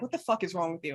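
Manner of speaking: mock dead-flat, low, unimpressed deadpan cat voice. Voicing a cat staring at its owner: mock deadpan cat voice. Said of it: "all deadpan".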